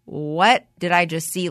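usual speaking voice

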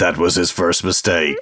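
low, put-on voice-over narrator delivery. Co-host answering the other host's trust in Fedora, narrator voice. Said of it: "Narrator's voice".

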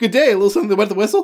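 rattled off in a single breath. Retelling how a crowd character talked, Oblivion NPC dialogue in one breath. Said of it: "oblivion N P C dialogue ever, where he's just, like, in a single breath".

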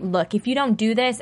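ordinary talk, nothing marked

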